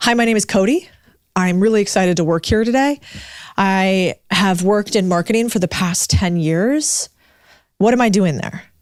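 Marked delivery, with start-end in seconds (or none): 0.0-7.1 every sentence ending on an upward rise. Coaching on tone, giving a bad example: rising uptick at sentence ends. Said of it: "I'm getting an uptick at the end of each sentence".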